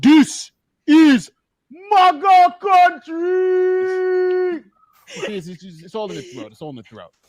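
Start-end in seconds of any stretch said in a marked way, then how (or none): 0.0-4.6 put-on Nigerian accent, much higher, slower. Showing friends how the phrase should be said; Nigerian accent. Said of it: "You got to say it with the Nigerian accent too".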